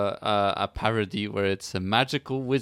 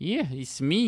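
put-on Scottish accent, higher; 8 semitones higher than usual. Recalling an actor voicing a game headmaster: Simon Pegg's Scottish accent. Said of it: "he was doing a Scottish accent again".

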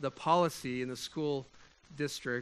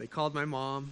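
ordinary talk, nothing marked

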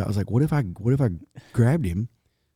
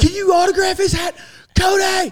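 mock fan-like scream, higher and louder; 6 dB louder than usual. Retelling a concert where a fan in the crowd held up a baby: imitating a fan screaming. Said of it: "he starts screaming".

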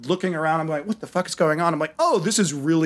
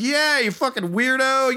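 mock, high-pitched, all-out screaming yell; 8 semitones higher than usual. Retelling confronting some guys, imitating own past scream. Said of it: "I start screaming like".

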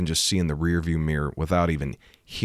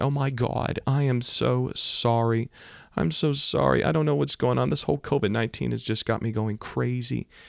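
put-on woman's sobbing, much higher; 8 semitones higher than usual. Retelling what the crying driver said after hitting his car, imitating a sobbing woman. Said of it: "she's just sobbing. She's just crying".

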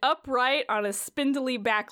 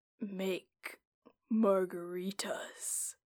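low, hushed, far-off distant voice; 5 semitones lower, 8 dB quieter than usual. Narrator voicing a strange hooded figure, in a low distant voice. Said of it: "you can hear a low voice come from the strange hooded figure".

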